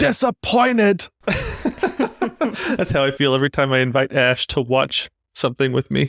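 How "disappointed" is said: high-pitched, slow, loud yell. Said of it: "he just yells at the heavens".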